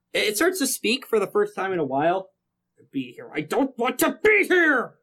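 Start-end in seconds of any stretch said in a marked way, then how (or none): 2.9-4.8 high, slow, dragged-out yell. Game master voicing a talking gun as it speaks to the players, shouting. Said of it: "you start to hear it shout".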